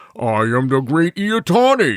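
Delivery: roaring deity-like monster voice. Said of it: "you can hear".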